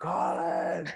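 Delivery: high, acted-out screaming yell. Recounting screaming for someone when his hand would not close, retelling screaming a name. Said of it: "So I'm like screaming for him".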